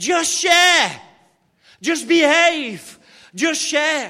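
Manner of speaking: booming, very loud, drawn-out yell. Storyteller acting out a man upstairs yelling at a ruckus downstairs, retelling a shout. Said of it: "he shouts downstairs".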